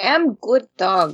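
put-on Russian accent bending the English. A podcast co-host, just introduced by the host, answers in a Russian accent. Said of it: "That was my best Russian accent".

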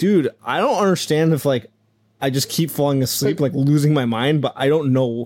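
plain

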